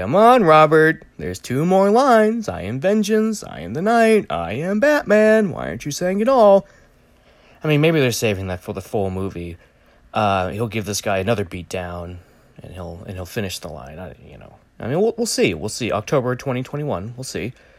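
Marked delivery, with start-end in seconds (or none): 0.0-6.7 very high, swooping, drawn-out, unhurried voice. Imagining a reaction to the trailer: imitating Kevin Conroy. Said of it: "Kevin Conroy will be watching this trailer going".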